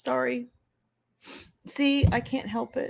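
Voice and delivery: teary, choked up. Apologizing for getting emotional while being hugged: teary, emotional. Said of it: "you teared up".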